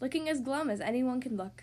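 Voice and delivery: ordinary delivery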